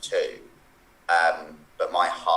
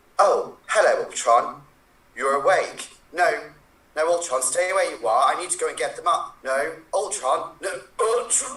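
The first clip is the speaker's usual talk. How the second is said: put-on falsetto, very high throughout; 11 semitones higher, 3 dB louder than usual. Trying to top the others with a Jarvis impression: Jarvis impression. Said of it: "did you think you could do a good Jarvis".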